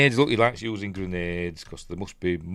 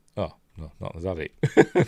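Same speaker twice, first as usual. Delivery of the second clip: ordinary delivery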